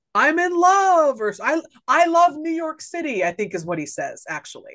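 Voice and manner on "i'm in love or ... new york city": long, high, drawn-out hollering yell. Retelling the part where Deeds falls over trash cans, retelling a yell. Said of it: "he's yelling like".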